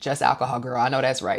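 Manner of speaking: normal talking voice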